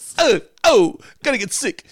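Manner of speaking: very high, loud whine. Mocking an old TV movie character: pissy John Travolta impersonation. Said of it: "my pissy Travolta impersonation".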